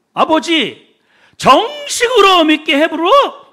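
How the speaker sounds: put-on Jeolla regional Korean accent. Retelling an old woman's prayer at a dawn village service, imitating Jeolla dialect. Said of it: "전라도 사투리를 쓰면서".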